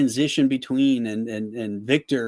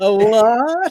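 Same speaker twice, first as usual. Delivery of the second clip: very high, very loud put-on South Carolina drawl; 10 semitones higher, 8 dB louder than usual. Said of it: "How did his accent go from, like, New England to South Carolina?".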